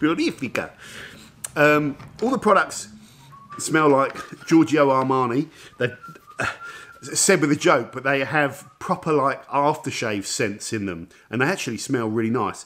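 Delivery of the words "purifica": light, playful, jokey Italian accent. Reading a product name aloud: playful Italian accent. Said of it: "saying everything with a little Italian accent".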